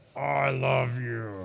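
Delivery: low, gravelly mutter forced through clenched teeth. Father imitating his child told to hug his brother: mimicking gritted-teeth 'I love you'. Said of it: "it is through gritted teeth".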